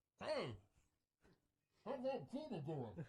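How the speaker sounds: bad, high, slow, drawn-out funny put-on voice. Quoting what a man always says first when he contacts him, chainsaw guy impression. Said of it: "is that your chainsaw guy impression? Yeah".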